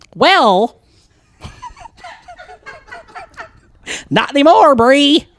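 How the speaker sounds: shrill, very high, loud, booming, sing-song swooping drawl. Reading the reply text aloud as Kyle: imitating a friend named Kyle. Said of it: "I'm gonna be Kyle".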